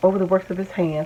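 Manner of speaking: ordinary talk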